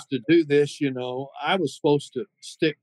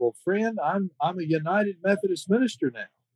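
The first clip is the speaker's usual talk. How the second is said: put-on, puffed-up voice full of pride; 4 semitones higher, 3 dB quieter than usual. Retelling his answer to a fan's question, imitating his own proud reply. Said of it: "all the pride I could muster".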